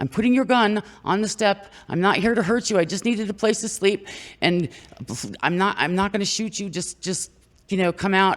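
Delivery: high-pitched shout, pitched very high. Retelling a stranger calling through a trailer window: imitating a man yelling. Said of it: "was yelling through the window".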